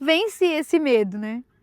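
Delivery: emotional, close to crying. Telling own story to an audience: nearly crying. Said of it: "Tô quase chorando".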